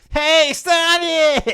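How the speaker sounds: put-on very high, very loud childish boy voice. Mocking how a character sounded in Sonic Heroes: kid-like voice. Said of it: "he just sounded like a fucking kid".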